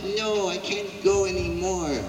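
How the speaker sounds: high, soft little pained voice like a tiny doll.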